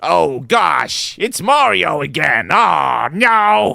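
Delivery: very high, raspy, rough tiny creature voice. Voicing the blue virus while playing with friends, in a blue virus voice. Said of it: "here's the blue one".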